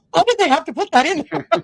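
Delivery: high, loud, exasperated, outraged whine. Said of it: "and my mom's like".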